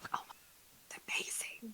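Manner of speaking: soft, breathy whispered aside. Talking about Nicolas Cage, whispering. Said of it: "that was me whispering".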